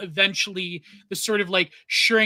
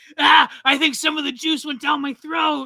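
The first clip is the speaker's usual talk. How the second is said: loud, pitched-up cartoon voice, belted out; 8 semitones higher, 5 dB louder than usual. Recalling a Simpsons episode, acting out Krusty after the commercial, in a Krusty impression. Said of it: "you do an incredible Krusty uh, impression".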